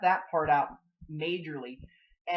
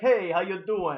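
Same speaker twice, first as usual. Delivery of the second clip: fake, put-on, bad, clumsy Russian accent; 3 dB louder than usual. Retelling how a cosmonaut greets someone: bad Russian accent. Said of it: "that's a bad Russian accent".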